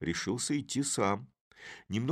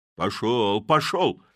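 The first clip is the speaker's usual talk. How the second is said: loud, forceful shout; 7 dB louder than usual. The blacksmith pushes Chub away again, shouting. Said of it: "кричал кузнец".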